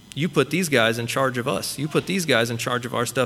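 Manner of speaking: ordinary talk, nothing marked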